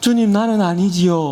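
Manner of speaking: worried, doubtful, pleading tone. Showing the wrong answer to the Lord, in a worried, doubtful tone. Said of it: "근심하면서".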